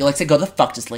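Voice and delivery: mock angry, mad outburst. Retelling snapping at the device after its weather report: imitating own angry outburst. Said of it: "Why are you mad at her?".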